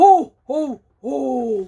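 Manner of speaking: very low, booming voice. Showing listeners Santa's laugh done really low: low Santa ho ho ho. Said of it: "give your best Santa really low".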